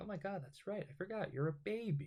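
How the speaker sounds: very high, startled, surprised exclamation. Retelling a girlfriend's reaction to a birth year: imitating girlfriend sounding surprised. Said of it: "she looks at me, like, surprised".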